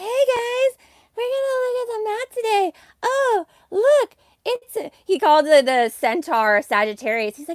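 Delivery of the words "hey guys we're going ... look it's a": very high, effeminate chattering voice. Mocking how Jay Dreamers talks while looking at the map: Jay Dreamers effeminate voice impression. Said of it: "has like the most effeminate voice".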